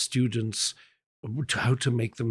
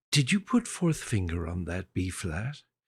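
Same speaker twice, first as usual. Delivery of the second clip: perfectly calm, even voice; 4 semitones lower, 3 dB quieter than usual. Retelling a woman's question about fingering, imitating her very calm voice. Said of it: "she had the most calm voice".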